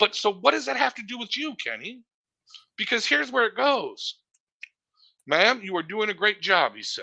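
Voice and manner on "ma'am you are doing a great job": mimicked snide tone with attitude. Retelling how a man spoke to a flustered woman: imitating someone saying it with attitude. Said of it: "with an attitude like I was giving her".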